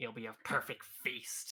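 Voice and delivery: snarling creature voice. Game master voices a monster's words to a player, in a snarling monster voice. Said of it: "it just snarls at you again".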